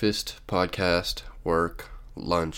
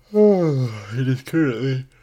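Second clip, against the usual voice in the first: words swallowed by very loud yawn, "it" drawn out; 7 semitones higher, 8 dB louder than usual. Podcast host opening the show early in the morning, yawning mid-sentence. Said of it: "sorry about that, yawn".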